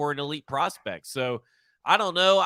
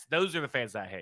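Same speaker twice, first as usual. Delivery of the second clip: ordinary delivery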